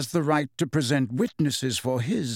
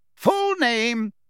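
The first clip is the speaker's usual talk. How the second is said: spoken out loudly, pitched up; 8 semitones higher, 4 dB louder than usual. Fudge addresses Mrs. Fig once she is seated, loud. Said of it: "said Fudge loudly".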